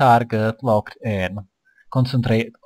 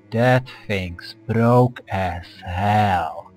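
slow, deliberate, with hell drawn out; 3 semitones lower than usual. Repeating a phrase so the other speaker can understand: slowly. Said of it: "I'll take it slow so that you can understand".

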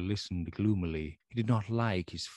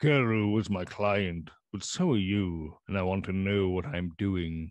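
usual speaking voice

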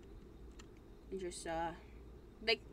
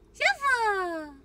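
high, loud squeaky cry. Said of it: "You sounded like Pikachu".

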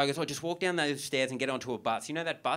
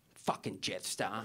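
put-on mutter under breath, lower and quieter; 4 semitones lower, 6 dB quieter than usual. Retelling what an arguing woman muttered as the speaker boarded, retelling a mutter under breath. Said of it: "just under her breath".

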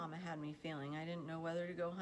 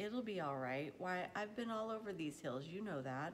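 ordinary delivery

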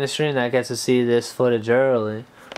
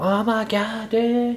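high, mock-angry outburst. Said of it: "he'll get all, like, mad".

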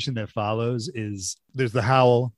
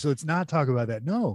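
put-on weird deadpan delivery, quieter; 3 semitones higher, 4 dB quieter than usual. Retelling a movie scene: imitating Gene Wilder's weird deadpan. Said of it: "weird deadpan".

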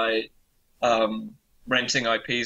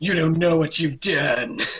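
high-pitched cartoon dad voice; 5 semitones higher, 4 dB louder than usual. Speaker recalls a voice in a lava cave shot, sounding like Randy from South Park. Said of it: "this voice that sounded like Randy from South Park going".

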